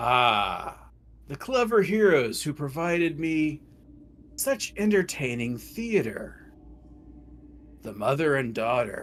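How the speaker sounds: resonant, ringing, sonorous voice with drawn-out "ah". Voicing a voice that one hero hears in their head, deep and sonorous. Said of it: "hears a deep, sonorous voice".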